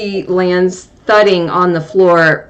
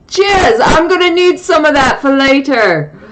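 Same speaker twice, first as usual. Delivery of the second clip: talking through a very high cackle; 9 semitones higher than usual. Voicing a halfling calling down from a balcony: cackling halfling voice. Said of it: "you hear the halfling cackling from the balcony".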